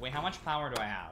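ordinary delivery

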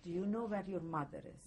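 normal talking voice

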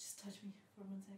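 whispered, breathy and soft.

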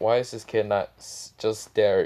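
plain

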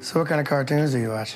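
put-on flat deadpan voice, no variation. Recalling someone looking square in the eyes: imitating Michael's deadpan. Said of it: "I think Michael's was like a, ... It was deadpan like that though".

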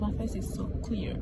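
soft, unvoiced whisper.

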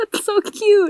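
tearful voice, crying while talking. Reacting to a touching story just told, crying while talking. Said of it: "I'm actually crying".

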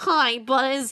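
very loud, belted-out put-on character voice. Hesitantly trying out a character voice to greet Buzz: Rex voice. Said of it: "does that mean I have to do a Rex voice? I mean, I'll try".

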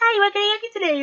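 very high, peppy customer-service voice.

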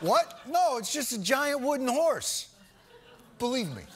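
brushing it off, caught-out, lying tone. Giving examples of people who say "believe me" while lying: acting out a liar's excuse. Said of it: "Here's some examples".

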